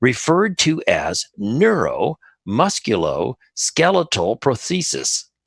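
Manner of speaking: very slow, word by word, careful enunciation. Getting through a long term on a Friday afternoon, said real slow. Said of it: "I had to say that real slow".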